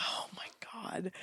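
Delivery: stunned, breathless, shocked whisper.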